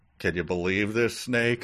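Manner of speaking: ordinary delivery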